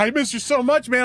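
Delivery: play-acted sobbing, weepy, tearful crying voice. Retelling a friend crying in the car on a road trip: imitating a friend crying. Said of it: "he's crying".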